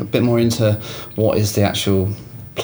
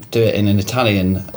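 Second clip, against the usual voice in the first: normal talking voice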